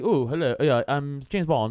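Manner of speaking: put-on posh upper-class English accent. Comparing British accents, a speaker demonstrates the highbrow one: highbrow English accent. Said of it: "the highbrow is like".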